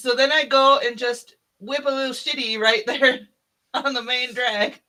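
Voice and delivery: words broken up by laughing. Recounting a story to a listener, laughing while talking. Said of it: "I'm sorry, I can't stop laughing".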